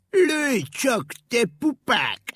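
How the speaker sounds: very drawn-out, slow, loud, scornful jeering voice. Brave ink rabbit answers a boy aiming a slingshot at him, mocking. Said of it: "gúnyosan nevetett".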